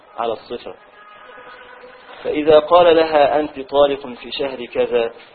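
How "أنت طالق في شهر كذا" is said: ordinary talk, nothing marked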